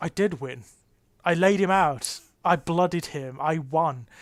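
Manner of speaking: ordinary talk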